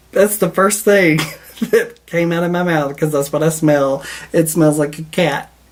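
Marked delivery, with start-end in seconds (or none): 0.1-4.0 giggly, half-laughing speech. Describing a scent that smells like a cat: laughing while talking. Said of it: "Sorry, I'm laugh-".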